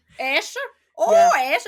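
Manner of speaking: put-on very loud, sing-song, swooping Northern Irish accent. Imitating a great aunt greeting a child: Northern Irish accent imitating Auntie Bridie. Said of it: "That's all I can do".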